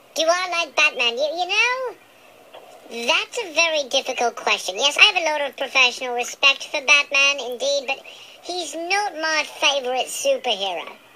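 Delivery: high chipmunk voice. Dirk the chipmunk answers a caller's question, in Dirk's chipmunk voice. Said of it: "the fourth and forgotten chipmunk".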